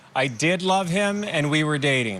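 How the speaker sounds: plain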